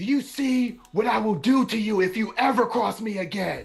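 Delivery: big, very high, booming voice. A game master voices a character holding up a lifeless body, booming voice. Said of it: "he's gonna use booming voice".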